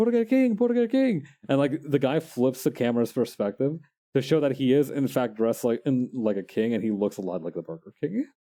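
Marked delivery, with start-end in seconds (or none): 0.0-1.3 put-on jeering, heckling yell, very high. Recounting a video where guys at a food truck heckle a man: imitating hecklers yelling. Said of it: "they were yelling like".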